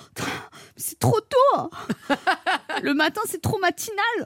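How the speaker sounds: put-on high, whiny, grumpy teenage girl complaining voice.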